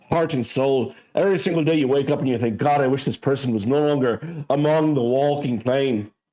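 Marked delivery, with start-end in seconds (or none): none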